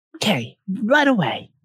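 little tiny, high, cheerful happy voice. Answering a knock at the door: little tiny happy voice. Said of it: "Gives a little tiny, happy voice".

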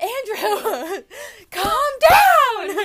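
very high, loud laughing scream, then calming down.

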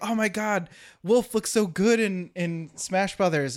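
put-on gushing, thrilled, high-pitched excited shriek. Retelling a friend's reaction to a game announcement: imitating someone screaming excitedly. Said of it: "she would s-, scream about something".

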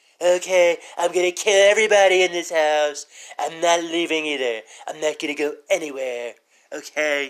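put-on teenage girl voice. Imagining a horror movie called The Orange Man: Donald sounding like a teenage girl. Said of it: "I just made Donald sound like a teenage girl".

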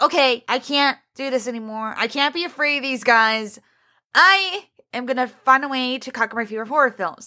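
ordinary talk, nothing marked

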